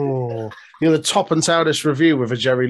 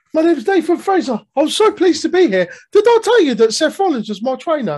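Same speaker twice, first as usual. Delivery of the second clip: put-on very high, piping, Victorian street-orphan child voice; 4 dB louder than usual. After noting that he was missing this week, do a Nathan Fraser impression sounding like Oliver Twist. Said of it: "Why have you made him sound like Oliver Twist?".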